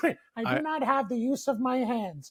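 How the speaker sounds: high, slow, drawn-out put-on voice. Acting out a scene from a favorite show episode: Conky voice. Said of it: "Doing pretty good Conky, eh?".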